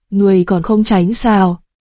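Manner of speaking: ordinary delivery, nothing marked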